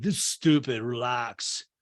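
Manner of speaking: slow, drawn-out surfer dude voice. Retelling what a guy told the group in a story, in a surfer voice. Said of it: "I know I'm doing them as like surfer voices".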